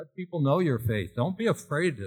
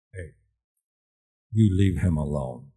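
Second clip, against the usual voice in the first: very low voice, raised in volume; 9 semitones lower, 5 dB louder than usual. Retelling how an older neighborhood man spoke to a kid, in a real low voice. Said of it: "with that real low voice".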